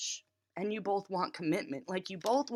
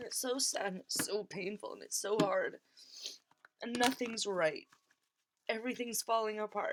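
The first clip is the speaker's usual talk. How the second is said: speaking while crying, tearful; 4 dB quieter than usual. Speaking on a recording, crying. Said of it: "That's why I'm crying again".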